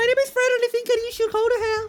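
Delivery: put-on high voice. Describing a man whose shtick was pitching up his voice, imitating a pitched-up voice. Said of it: "He pitch up his voice".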